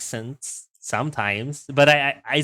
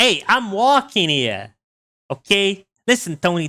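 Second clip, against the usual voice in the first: put-on New York gangster accent; 6 semitones higher, 4 dB louder than usual. Speaker going with a classic impression after a rat squeak, stereotypical New York accent. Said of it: "the stereotypical New York accent".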